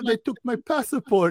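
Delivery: mock Eastern European female voice. Retelling what eastern european strippers said: imitating eastern european strippers. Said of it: "they were all like, they're like".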